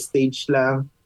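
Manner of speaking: ordinary talk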